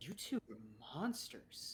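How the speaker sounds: soft, slow, quietly menacing voice. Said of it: "She looks at both of you and goes".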